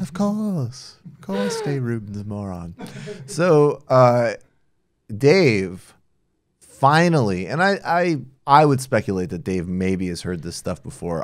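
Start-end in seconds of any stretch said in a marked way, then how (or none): 0.0-2.8 put-on British accent. Saying a line after another speaker asks for it: put-on British accent. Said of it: "in a British accent".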